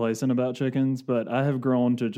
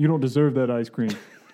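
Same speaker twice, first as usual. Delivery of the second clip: put-on mobster-style voice. Imitating Trump scolding children over ice cream: Trump impression like Tony Soprano. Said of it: "I always make him sound like Tony Soprano".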